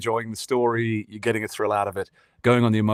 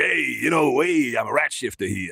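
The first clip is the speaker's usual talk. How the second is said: put-on New York accent, higher, slower; 3 semitones higher than usual. Recalling an early voice try-out for Wally, New York accent. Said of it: "I was doing a kind of like New York kind of thing".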